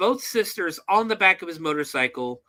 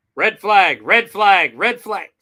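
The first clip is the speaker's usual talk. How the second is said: ordinary delivery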